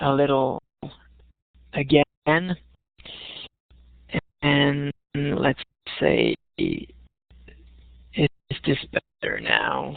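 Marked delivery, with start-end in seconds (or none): 4.4-10.0 slow, drawn-out, slowed-down speech. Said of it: "I'll maybe slow the, uh, the speed down a little".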